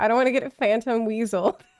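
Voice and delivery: ordinary delivery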